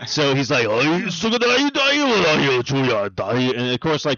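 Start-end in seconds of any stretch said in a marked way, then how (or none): 0.6-3.4 put-on very deep voice. Describing a game trailer, imitating its very deep Detective Pikachu voice. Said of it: "but his voice is very deep".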